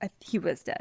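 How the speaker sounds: ordinary delivery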